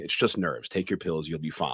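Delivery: ordinary delivery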